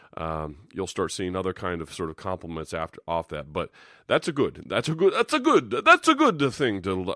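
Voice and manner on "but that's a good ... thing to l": put-on cheesy, corny Italian accent, high and loud. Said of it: "cheesy corny, terrible Italian accent".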